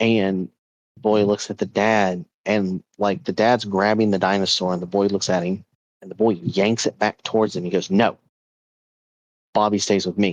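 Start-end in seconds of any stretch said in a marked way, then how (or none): 7.9-10.3 stubborn, forceful, unruly flat-out refusal tone. Retelling a boy yanking his toy back from his dad: imitating a forceful child. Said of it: "Very forceful, right, for a child".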